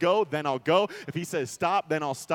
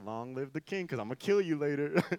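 muttered from side of mouth, lower, quieter; 3 semitones lower, 7 dB quieter than usual. Acting out the queen mother greeting the king: said out of the side of the mouth. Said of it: "out of the side of her mouth".

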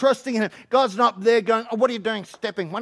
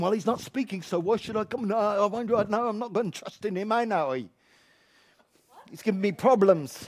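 soft, put-on British accent; 6 dB quieter than usual. Preaching about trusting the bible, in a put-on uk accent. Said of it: "I'm doing my UK accent".

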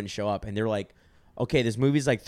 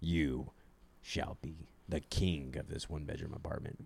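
whispered, fake deep put-on voice; 7 semitones lower, 13 dB quieter than usual. Keeping up a put-on voice the whole bit: put-on deep voice. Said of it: "I keep a deep voice the whole time".

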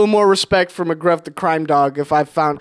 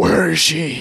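gruff put-on superhero voice, lower; 3 semitones lower than usual. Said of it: "Like Batman?".

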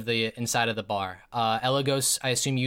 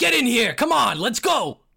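very high, loud shouting yell; 11 semitones higher, 6 dB louder than usual. A game narrator voices Larry yelling over to the players. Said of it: "you see Larry yell over to you".

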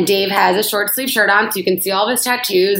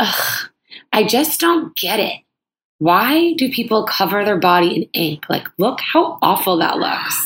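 mock snide woman's voice, put-on tone. Telling a friend what a woman said near Dave: mocking a snide woman. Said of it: "this woman's like really being a bitch".

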